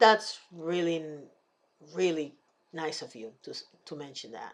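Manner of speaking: dry sarcastic voice, pitched very low. Video host addressing a commenter's remark, being sarcastic. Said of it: "I'm being sarcastic".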